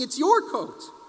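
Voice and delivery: high, screamed, insistent screaming. Retelling the second visit, both people offering the coat: imitating someone screaming. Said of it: "you both were screaming".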